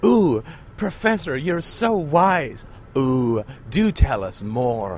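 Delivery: over-the-top, exaggerated gushing admiration, swooping voice. Speaker imagines listeners addressing the professor, in an exaggerated put-on admirer voice. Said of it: "I'm gonna sort of hyper-characterize this".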